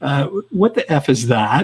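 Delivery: slow, mock anxious, uneasy and worried tone. Retelling spotting something while working on a buddy's sled, worried voice. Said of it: "ask in a worried voice".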